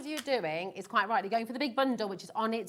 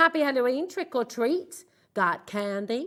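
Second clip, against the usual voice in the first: put-on, mock American accent; 3 dB louder than usual. Reading out Halloween sticker words: put-on American accent. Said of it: "I said that in American accent".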